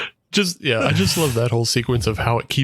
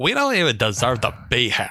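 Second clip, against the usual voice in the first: put-on bratty, entitled, annoying spoiled rich girl voice. Retelling what two spoiled rich girls in a film said: imitating annoying spoiled rich girl voice. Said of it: "they're doing the annoying voice".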